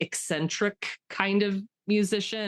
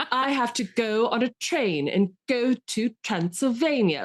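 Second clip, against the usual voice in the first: put-on try-hard fake British accent, higher; 5 semitones higher, 3 dB louder than usual. Mocking an actor's try-hard British accent in a film role: imitating Keanu Reeves's overdone British accent. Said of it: "like they're doing a high school production".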